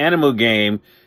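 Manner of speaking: ordinary delivery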